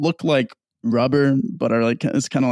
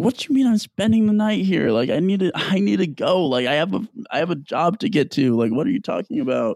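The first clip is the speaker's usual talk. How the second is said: mock upset voice, higher pitch; 6 semitones higher than usual. Retelling a woman told by a social worker she must stay the night: acting out being super upset. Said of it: "Now she's like super upset and she's like".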